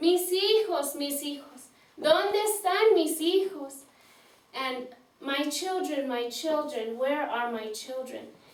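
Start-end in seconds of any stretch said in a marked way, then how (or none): none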